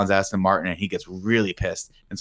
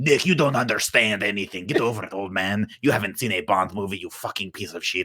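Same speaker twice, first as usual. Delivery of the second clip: insult-comic puppet voice with roast delivery; 3 dB quieter than usual. Reading out imagined viewer comments in a mocking voice: Triumph the Insult Comic Dog voice. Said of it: "Triumph the Insult Comic Talk".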